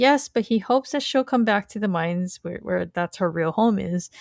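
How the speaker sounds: plain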